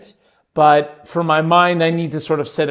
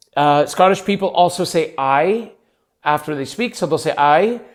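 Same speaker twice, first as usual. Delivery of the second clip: ordinary talk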